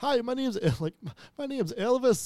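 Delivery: put-on heavy Scottish accent. Retelling a video game character's line on screen: thick Scottish accent. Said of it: "the character repeated on screen".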